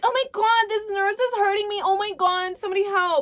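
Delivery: very high, hysterical, acted-out victim screaming. Retelling Brad screaming at a nurse: imitating Brad screaming like a victim. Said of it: "he just starts screaming like he's the victim".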